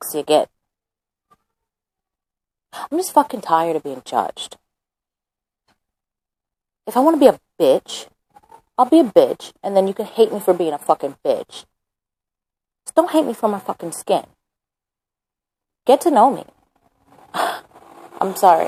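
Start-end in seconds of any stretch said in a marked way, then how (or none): 2.7-16.4 speaking angrily. Speaking of being judged for skin color, going from sad to angry. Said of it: "I just completely went from angry to, from sad to angry".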